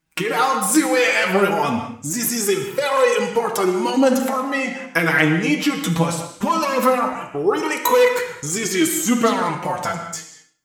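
mock megaphone character yelling. A player voices Cypher in a roleplaying game: Cypher's megaphone yell. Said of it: "They yell".

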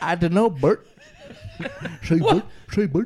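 very loud, high, booming cartoon puppet voice. Chatting about films, the speaker slips into a bit addressing Bert: Sesame Street puppet voice. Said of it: "What's that accent?".

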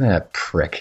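low, soft under-the-breath muttered curse. Acting a wrestler muttering an insult as someone walks away: muttered under breath. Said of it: "under my breath".

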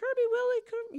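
put-on nice, gentle, very high calling voice. Re-enacting calling the dogs by name, in a nice, gentle call. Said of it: "this nice call".

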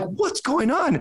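high, slow, alarmed cry.

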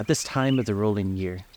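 plain

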